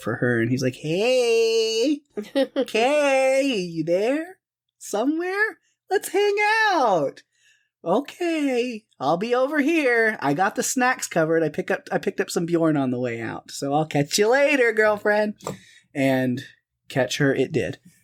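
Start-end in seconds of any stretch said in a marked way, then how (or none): 0.7-15.3 high, swooping little voice, "hey" stretched out. Retelling a scene, voicing the xenomorph looking for her, in a xenomorph voice. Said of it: "I did my own little voice for the xenomorph".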